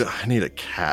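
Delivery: quiet muttering under the breath. Voicing the baker as she shuts the door: muttered under her breath. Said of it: "You hear a muttered".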